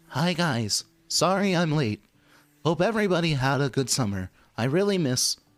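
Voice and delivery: high-pitched text-to-speech voice. Voicing a generic student character in a Siri voice. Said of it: "give him like a Siri voice to text kind of kind of voice".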